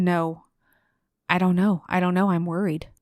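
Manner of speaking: usual speaking voice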